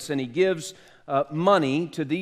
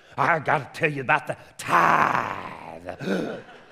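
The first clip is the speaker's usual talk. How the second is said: put-on very slow, rough old-time preacher drawl; 2 semitones lower than usual. Saying the word tithe like a preacher from the past: imitating an old-time preacher. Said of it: "I wanna say it like an old-time preacher".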